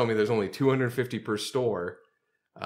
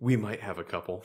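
low, hushed, secretive, conspiratorial stage whisper; 4 dB quieter than usual. Retelling how a seller suddenly answered a request for ornaments: imitating a half-whisper. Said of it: "He like suddenly starts whispering to me".

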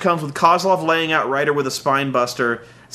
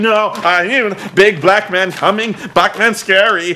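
slow, frightened, panicked freak-out; 4 semitones higher, 4 dB louder than usual. Retelling a wrestling match, acting out the Miz freaking out: imitating the Miz freaking out. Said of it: "he starts freaking out".

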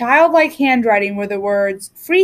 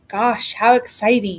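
utterly uninterested, very unexcited, bored delivery; 2 semitones lower, 3 dB quieter than usual. Peter answers his sister during the board game, very unexcited voice. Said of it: "said Peter in a very unexcited voice".

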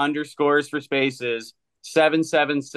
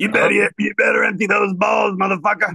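higher, louder put-on gruff comedian voice; 6 semitones higher, 4 dB louder than usual. Doing an impression for the others: Joey Diaz impression. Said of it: "That's a pretty good impression".

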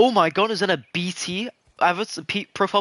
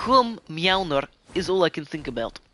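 put-on Russian accent. Playing with how to say a word, now repeating it: Russian accent. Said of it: "I'm gonna speak like Russian now".

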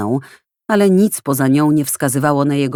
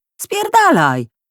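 cutting, sharp, very high-pitched tone. Someone snaps back at a man who asked if he'd dropped something: sharp voice. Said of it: "Usłyszał ostry głos".

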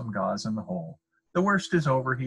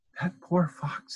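whispered, higher-pitched; 7 semitones higher than usual. The dentist speaks to his wife about the fox; whispering. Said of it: "he whispered to his wife".

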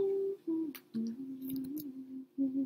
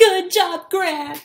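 put-on cheering voice, much louder; 5 semitones higher, 17 dB louder than usual. Congratulating someone newly hired at the courthouse, in the 'good job, Garnet!' voice. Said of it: "I tried to say that in the good job, Garnet! voice".

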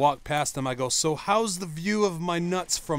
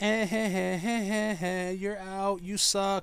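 put-on snotty girl voice, higher, slower; 5 semitones higher than usual. Retelling what the girl at first base said when he was out, imitating a snotty girl. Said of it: "She's like being all snotty with me".

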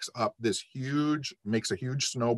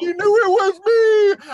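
mock crying, higher and louder; 13 dB louder than usual. Retelling a friend's words after the broken window, imitating a crying friend. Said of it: "My friend's crying".

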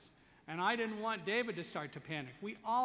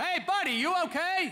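very loud, very high-pitched call; 12 semitones higher, 11 dB louder than usual. A blind man retells a firefighter stopping him on the stairs; retelling a loud call. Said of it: "in this loud voice".

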